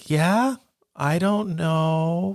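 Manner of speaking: "know" dragged out, high, eerie and very slow. Recalling a film scene where Carol Anne talks to ghosts: creepy Carol Anne voice. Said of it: "Just her voice, like ... it's just so creepy".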